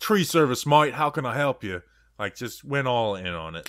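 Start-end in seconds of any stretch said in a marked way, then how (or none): 0.0-1.8 put-on Australian accent, fully committed. Retelling how their dad answered the phone for his tree service, Australian accent. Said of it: "They were just doing the Australian voice thing".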